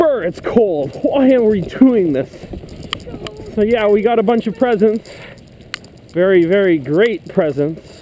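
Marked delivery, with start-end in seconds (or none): 6.1-7.8 mocking, insincere, sarcastic tone. Heading home in the cold, talking about the presents, sarcastic.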